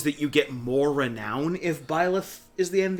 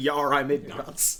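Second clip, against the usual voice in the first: usual speaking voice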